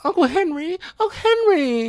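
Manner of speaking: annoying, whiny, very high-pitched whine. Mocking a film character's annoying voice: imitating Dorothy's whiny voice. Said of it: "annoying voice".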